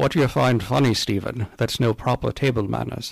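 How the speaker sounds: put-on Scottish accent. Retelling a scene where the diners are scolded at the table: Sean Connery voice. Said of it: "I'm not sure why he did that as Sean Connery".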